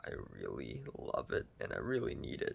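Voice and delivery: ultra deep voice. Speaker whose vocal cords hurt a little, talking in an ultra deep voice. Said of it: "my vocals sound like this now. They're ultra deep".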